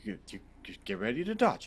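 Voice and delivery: quick whisper. Player character lifting a maul overhead and speaking to an ally, whispering. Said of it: "I just kind of whisper to him like".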